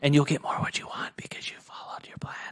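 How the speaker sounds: soft, secretive whispering. Podcast host speaks to the co-host as if sharing a secret: whispering. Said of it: "I had to whisper that".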